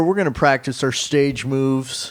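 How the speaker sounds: plain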